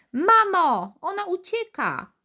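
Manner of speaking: very high, shrill, drawn-out, stretched-out scream. Narrating a girl calling to her mother, screaming. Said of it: "wrzasnęła naraz ta dziewczynka".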